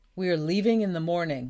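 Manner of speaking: ordinary delivery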